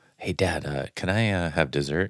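soft half-whisper under the breath. Retelling a daughter asking Dad for dessert: imitating a half-whisper. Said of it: "Why are you whispering?".

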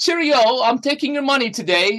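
put-on very high, genteel, polite British accent. Joking that robbers in the United Kingdom are polite: imitating a polite British robber. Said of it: "I'm thinking they're probably saying".

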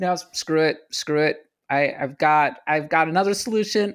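usual speaking voice

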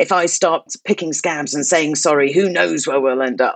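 growling delivery through the whole line. Quoting a TV character's line about saying sorry: imitating Logan Roy growling. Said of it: "he sort of growls".

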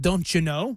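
imitated Midwestern accent. Giving examples of what Midwesterners say: imitating a Midwestern accent. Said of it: "Midwestern accent".

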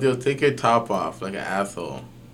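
plain

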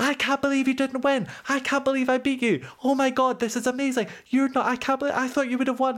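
put-on, very high-pitched screeching scream. After losing, retelling people screaming at the speaker. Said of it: "people were screaming at me like".

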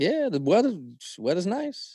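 very slow, swooping, swinging delivery. Imitating Byron Bowers talking about the weather: slow Byron Bowers impression. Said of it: "Byron's real slow".

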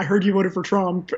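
whispered speech. Retelling what a woman at a party said to you: imitating someone whispering. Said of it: "whispered to me".

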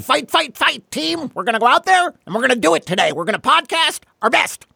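very high, rousing rallying tone. Greeting your podcast guest Stefan with a mock team talk, do a Knute Rockne impersonation. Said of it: "That was my Newt Rockne impersonation".

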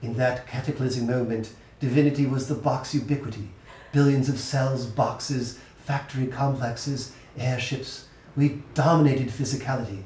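British woman's voice and accent. Asked to redo the passage with a female british accent, speaker reads it. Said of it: "Can you do this with a female British accent?".

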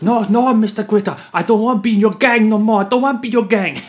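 shrill, very high, very loud put-on Thai accent. Joking at the start of a podcast episode, the host answers in a thai accent. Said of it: "Some really good Thai accent".

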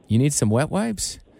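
put-on deadpan delivery. Telling what they would say to a date, acting out a deadpan reply. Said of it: "I would have been deadpan".

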